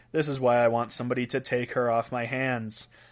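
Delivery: ordinary talk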